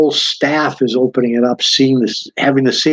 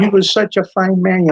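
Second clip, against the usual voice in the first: little, squeaky, small high-pitched voice; 6 semitones higher than usual. Recalling meeting Mike Tyson in tears over a columnist, in Mike Tyson's squeaky voice. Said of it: "He had this little squeaky voice".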